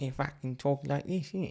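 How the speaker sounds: Cockney accent. Speaker imitating how the other speaker talks, in a cockney accent. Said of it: "Spit like Cockney".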